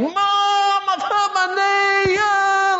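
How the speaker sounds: play-acted very high, very slow, drawn-out childish wailing. Retelling how Calvin walks into the house calling his mum: imitating Calvin wailing. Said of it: "he starts wailing".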